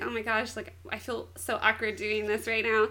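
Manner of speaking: plain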